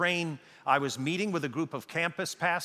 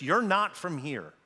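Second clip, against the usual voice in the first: put-on heavy German accent, laid on thick. Retelling what an elderly gentleman on a train said to them, in a thick german accent. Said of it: "he had a very thick German accent".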